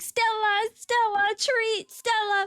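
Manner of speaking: put-on yelling. Retelling losing the dog and calling for her, acting out yelling. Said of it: "And I just start yelling".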